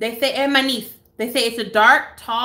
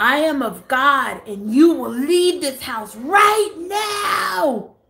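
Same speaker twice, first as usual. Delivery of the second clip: screamed delivery with the last word stretched out; 4 semitones higher than usual. Retelling what she said to the speaker, imitating someone screaming. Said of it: "Like screaming".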